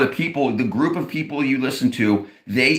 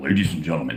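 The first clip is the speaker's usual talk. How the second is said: scripted news-anchor delivery, low, dropped voice; 10 semitones lower than usual. Mocking how people on the news talk, in a lowered newscaster voice. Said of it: "why are they lowering their voice?".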